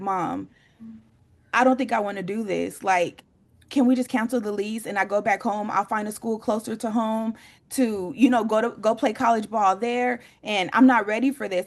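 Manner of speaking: mock pleading through tears, crying. Retelling a son's plea to cancel the lease: imitating son crying. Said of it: "he's crying, and he's like".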